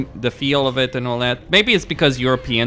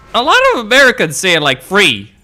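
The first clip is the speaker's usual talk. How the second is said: loud, high, indignant tone. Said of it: "And I'm like".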